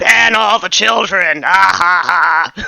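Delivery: gruff, loud, very slow voice. Voicing someone at the back of a meeting, calling out: gruff voice. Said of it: "a gruff voice somewhere from the back".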